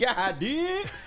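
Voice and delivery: put-on Californian accent. Talking quarterbacks with the chat, switching to a put-on californian accent. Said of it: "In my Cali voice".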